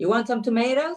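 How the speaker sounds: fake American accent. Asked for the most American thing to say, put-on American accent. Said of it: "in an American accent".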